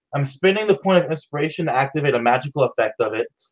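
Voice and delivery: normal talking voice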